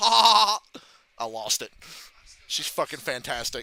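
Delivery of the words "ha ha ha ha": high, very loud, repeated cackling ha-ha laugh. Retelling Liv Morgan's taunt, imitating her grating laugh. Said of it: "That fucking laugh she does".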